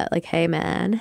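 put-on hippie stoner voice. Asked which of her voices is the hippie one, she demonstrates: hippie stoner voice. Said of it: "Which one's my hippie?".

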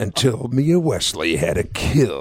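swooping big-screen movie narrator delivery. Reading a line from the volleyball write-up aloud: movie voice. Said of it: "that movie voice".

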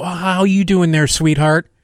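put-on overly sweet counter-clerk voice, pitched high. Retelling how a counter worker greeted customers: imitating an overly sweet counter worker. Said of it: "she would go".

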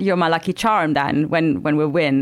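plain

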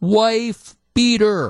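shrill, very high-pitched, top-of-lungs screaming yell. Retelling a fan behind him at a game: imitating a fan screaming. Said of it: "he starts screaming at the top of his lungs".

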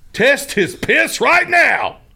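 very high, very slow, loud, drawn-out sports-host voice. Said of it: "That was my sports talk voice".

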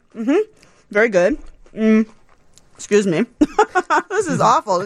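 talking with mouth full. Tasting barbecue during a radio show; talking with mouth full. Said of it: "I'm talking with my mouth full".

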